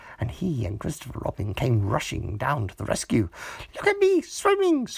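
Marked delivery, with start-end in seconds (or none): 3.8-4.9 squeaky, very high little voice. Roo calls out from the middle of the pond: squeaky. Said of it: "squeaked Roo".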